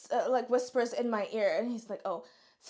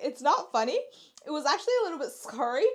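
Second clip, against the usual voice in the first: pitched-up, giggly speech through laughter; 5 semitones higher, 4 dB louder than usual. Recounting a scary moment with a friend, the speaker talks while laughing. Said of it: "I'm laughing".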